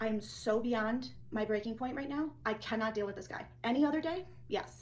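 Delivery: ordinary delivery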